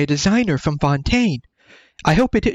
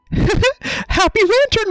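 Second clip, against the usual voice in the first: cheap put-on cartoon mouse-like voice, much higher. Trying again to get a voice actress's playfulness across, a Brianna Knickerbocker impression. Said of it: "that's probably sounds like discount Mickey Mouse again".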